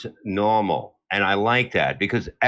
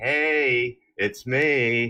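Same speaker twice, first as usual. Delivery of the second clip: mock creepy flirtatious tone; 2 semitones higher than usual. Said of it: "he's going into this creepy shit".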